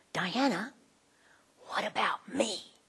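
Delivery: very quiet, small, still, hushed voice. Describing the voice she hears deep in her heart, God's still small voice. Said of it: "a still small voice saying".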